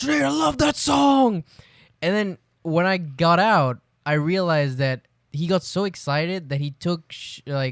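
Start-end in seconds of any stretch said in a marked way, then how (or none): 0.0-1.4 higher-pitched screaming. Retelling a roommate yelling from outside the shower: imitating someone screaming. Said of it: "he was screaming".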